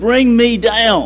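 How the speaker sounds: high, drawn-out, carrying yell.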